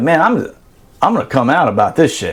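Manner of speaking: normal talking voice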